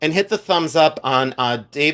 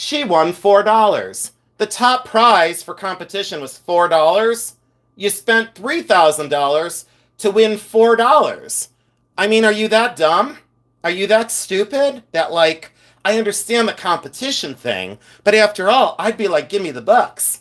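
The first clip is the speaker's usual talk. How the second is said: put-on hilarious, scoffing ridicule, high and amused; 5 semitones higher than usual. Retelling what mom would say about the competition; retelling mom's amused mocking. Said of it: "my mom would say it like hilarious".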